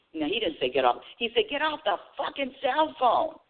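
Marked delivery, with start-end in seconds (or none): 1.5-3.2 mock, high-pitched screaming. Retelling a man screaming at the speaker from his window: imitating someone screaming. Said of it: "Screaming at me".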